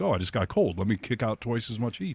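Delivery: ordinary talk, nothing marked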